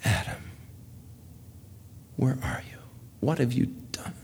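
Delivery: near-whispered, heartbroken sobbing. Retelling the Bible story, the speaker voices God calling Adam, imitating a sobbing heartbroken father. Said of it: "I hear the sob of a heartbroken father".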